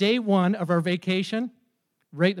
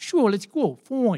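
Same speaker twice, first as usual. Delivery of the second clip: put-on slight Bronx accent; 2 semitones higher than usual. Retelling Ted agreeing to go for a walk, with a slight Bronx accent. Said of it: "He had like a little bit of a Bronx accent".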